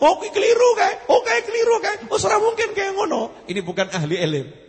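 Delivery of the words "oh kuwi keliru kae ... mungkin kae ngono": high, loud, scoffing know-it-all tone. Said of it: "Jangan ngomong".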